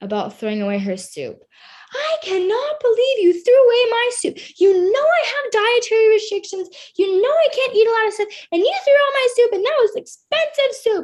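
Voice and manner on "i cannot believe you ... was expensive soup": mock shrill, very high, loud furious screaming. Retelling what an angry sorority leader shouted about thrown-out soup: imitating someone screaming angrily. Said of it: "she was screaming at me over soup".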